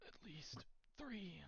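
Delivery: soft, high, strained, pained voice. A messenger answers the party in their minds, in a pained voice. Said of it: "it's a pained kind of voice".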